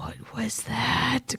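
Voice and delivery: hushed, breathy whisper under the breath. Voicing a character grasping their head, asking quietly under one's breath. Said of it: "quietly, under my breath".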